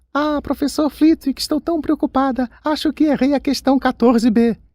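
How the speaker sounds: very high, teasing, mocking falsetto. Narrating a boy who teases his friend with a pretend plea: falsetto voice. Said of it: "fazendo a voz de falsete".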